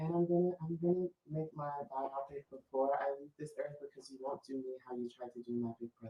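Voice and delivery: very soft, hushed voice, barely above silence. Trying again after being told it was still not soft enough, in a soft Janet voice. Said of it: "It's still not soft enough".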